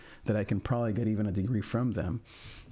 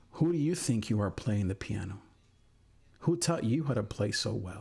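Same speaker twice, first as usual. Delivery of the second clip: mock, negative, condescending tone. Quoting a woman who came on stage to confront the speaker, mock-condescending tone. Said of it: "Like in this negative, condescending tone".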